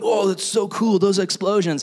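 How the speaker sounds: high, delighted giggling through every word. Retelling junior high boys watching the towers explode on a video: imitating boys laughing while talking. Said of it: "just laughing and going".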